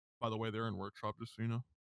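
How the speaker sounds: low, quiet, flat deadpan monotone. Recounting a game, a player retells what another player said, in a monotone. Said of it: "he just monotone goes".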